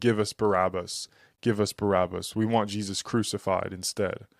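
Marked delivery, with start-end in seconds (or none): none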